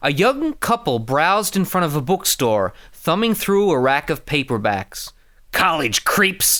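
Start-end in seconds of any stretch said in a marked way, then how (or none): 5.5-6.6 cold, icy, contemptuous hiss. Reading a novel extract aloud, a killer eyes passersby: hissed with cold contempt. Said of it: "Scorpio hissed with cold contempt".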